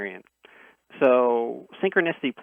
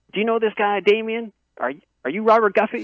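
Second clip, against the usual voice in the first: put-on Southern accent laid on thick, very high; 10 semitones higher, 4 dB louder than usual. Retelling a phone call from two strangers, imitating a thick southern accent. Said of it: "thick kinda, kinda southern accent".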